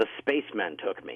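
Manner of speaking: put-on angry woman voice. Retelling what a woman said to the man who found her: imitating an angry woman. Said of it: "she's really angry".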